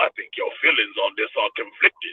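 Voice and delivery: breathy, whispered ruler's voice. Retelling a scene, doing the Emperor: Emperor voice. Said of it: "I gotta sound like the Emperor too".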